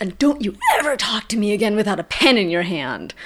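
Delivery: mock irritable, sharp, angry snapping. Recounting a payphone call where the other man suddenly snaps, retelling someone snapping. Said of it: "he like just snaps".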